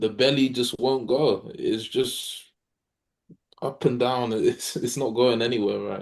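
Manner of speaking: words broken up by laughing. Answering a question about things tried, laughing while talking. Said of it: "I'm sorry if I'm laughing again".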